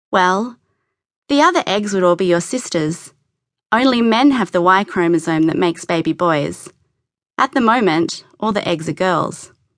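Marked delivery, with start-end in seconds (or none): none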